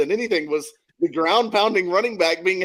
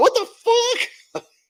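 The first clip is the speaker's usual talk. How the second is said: mock, fuming, very high furious outburst. Retelling own reaction to an annoying list online: imitating own furious reaction. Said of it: "smoke coming out of my ears going".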